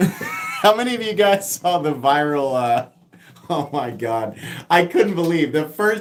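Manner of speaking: words spoken through laughter. Starting to tell viewers about a viral video, laughing while talking. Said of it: "I'm laughing so hard".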